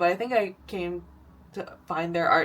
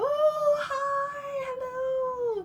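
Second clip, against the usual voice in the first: very high, gushing, excited voice, acted out; 4 dB quieter than usual. Speaker retelling greeting a studio mate's dog, excited dog-greeting voice. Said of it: "my like excited like greeting a dog voice".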